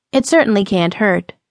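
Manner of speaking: plain reading voice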